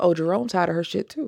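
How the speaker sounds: plain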